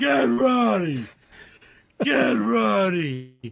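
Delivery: very slow, rough, creaky, high, dragged-out yell. Retelling how the other speaker yelled at the intern: imitating someone yelling. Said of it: "you were yelling at the intern".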